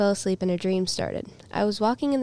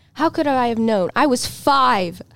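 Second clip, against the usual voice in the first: loud, furious yelling at close range; 3 semitones higher, 7 dB louder than usual. Reading a story aloud, the narrator yelling in her brother's face: yelling. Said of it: "I yell in his face".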